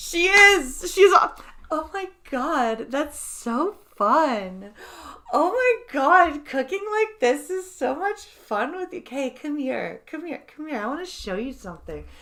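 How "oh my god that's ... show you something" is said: vapid, fake come-hither porn voice. Imitating how the woman in porn scenes always talks, porn actress voice. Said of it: "She does have the fucking porn voice".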